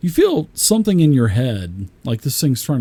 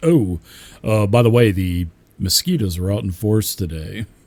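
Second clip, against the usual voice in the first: deep, low, manly baritone delivery; 5 semitones lower than usual. Voicing a game character dressed up as a female, in a deep manly voice. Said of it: "With that deep, manly voice".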